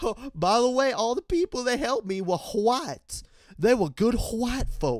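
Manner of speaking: put-on high-pitched old southern man voice. Imitating the woman being discussed, in a mock old southern plantation-owner voice. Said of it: "like an old racist Southern plantation owner".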